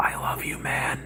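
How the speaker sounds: soft, slow, hushed whisper, close up. Retelling how one fighter pulled the other close: imitating Nicolas Cage whispering. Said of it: "whispers in his ear".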